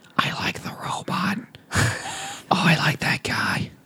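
hushed, soft, slow whisper. Retelling how a couple next to them in the theater kept talking: imitating someone whispering. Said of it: "whispering like this".

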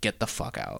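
fake tearful voice. Retelling being kicked out of home by mom: imitating mom crying. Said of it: "she was crying, and she was like".

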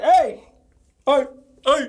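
repeated, acted-out hollered yells, one after another. Redoing the voice used to act out being yelled at: imitating someone yelling. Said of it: "I really hate when I do that voice".

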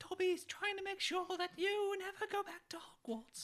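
very high, squeaky, fretful, neurotic elf voice. Quoting a Harry Potter character's warning to a friend, in a Dobby impression. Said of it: "one of the best impressions I've ever heard".

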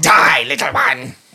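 devil character voice. Game master speaking as the devil facing a player, voicing a devil. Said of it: "the devil in front of you responds".

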